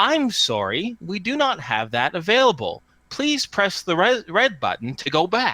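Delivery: high, cheerful, pleasant chiming machine voice. A narrator voices a terminal answering the upset dog boy, happy, pleasant machine voice. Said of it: "chime out in a happy, pleasant voice".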